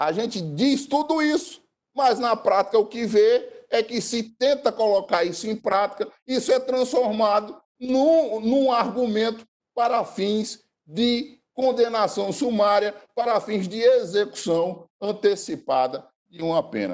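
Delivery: high-pitched, heated, indignant outburst.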